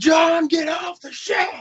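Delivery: very high, shrill, loud yelling. Recalling an SNL barbecue sketch for listeners, imitating Will Ferrell yelling at his kids. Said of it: "He's just yelling at his kids".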